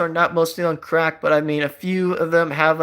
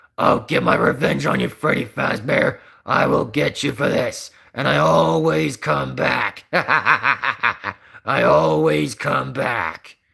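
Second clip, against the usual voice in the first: very deep, very slow creaky voice, every word dragged; 4 semitones lower than usual. Showing the character voice they always do, Springtrap voice. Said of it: "is supposed to be a deeper voice".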